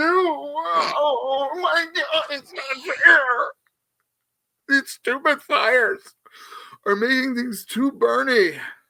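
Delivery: put-on emotional outburst, pitched high. Asking for one more dollar to be raised: mock emotional outburst. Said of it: "I'm sorry, I got emotional there".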